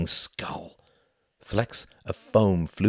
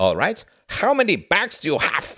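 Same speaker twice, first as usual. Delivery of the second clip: fake German accent, very high and swooping; 10 semitones higher than usual. [name] repeats his question to Tom, in a mock German accent. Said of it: "asked [name] in a mock German accent".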